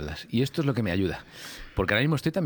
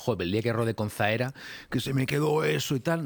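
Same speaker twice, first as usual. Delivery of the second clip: ordinary talk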